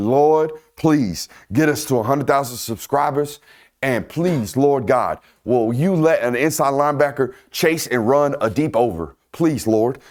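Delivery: imploring, beseeching, begging tone throughout. Acting out own begging prayer to the lord: mock pleading prayer. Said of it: "I've been begging and pleading".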